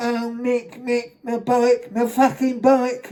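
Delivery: talking through the nose. Mocking a man who shouted at him about his bike, mocking nasal voice. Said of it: "He's talking through his nose".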